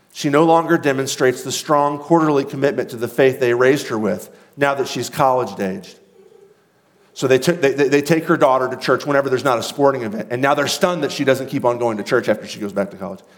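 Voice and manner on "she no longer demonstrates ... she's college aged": ordinary delivery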